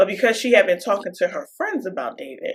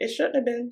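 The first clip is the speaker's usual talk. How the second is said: soft, nonchalant, shrugging-off tone. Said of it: "Just as nonchalant as that".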